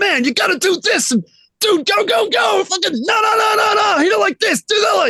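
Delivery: put-on scream. Describing a man's full-on passion in the studio, imitating him screaming. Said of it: "like his fucking scream at you".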